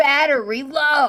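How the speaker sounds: very loud shouted whisper. Startled by their headphones, the speaker mimics the low-battery alert: imitating headphones' loud whisper. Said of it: "it's like a loud whisper".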